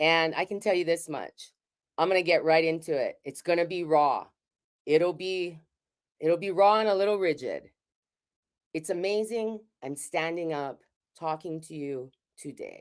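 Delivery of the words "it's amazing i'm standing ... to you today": soft delivery, voice full of emotion. Speaking to an audience about living in Colorado, with emotion in the voice. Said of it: "I say that with emotion in my voice".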